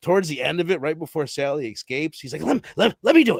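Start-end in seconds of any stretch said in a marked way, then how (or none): 2.4-3.4 mock excited voice, higher and louder. Retelling a film scene, quoting the hitchhiker: imitating excited hitchhiker. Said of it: "everybody's getting so excited".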